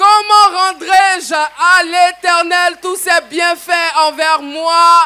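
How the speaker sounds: loud, belted-out shouting.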